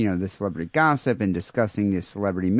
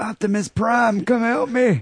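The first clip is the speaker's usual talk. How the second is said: mock drunk yelling, higher; 12 semitones higher than usual. Imagining a drunk man thrown out of a bar: imitating drunken screaming. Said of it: "started screaming, like".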